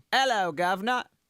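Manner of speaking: put-on London accent. Taking a turn at a london accent greeting, in a london accent. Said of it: "my go-to when I'm trying to get into my London accent".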